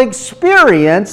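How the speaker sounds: extra stress on the word experience.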